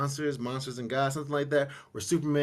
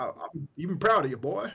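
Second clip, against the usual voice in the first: put-on old southern voice and accent; 3 semitones higher, 3 dB louder than usual. Quoting a father's speech to his son from a film: imitating a father, old Southern voice. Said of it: "it sounds like a old Southern".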